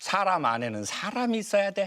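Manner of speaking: scolding tone in a regional dialect.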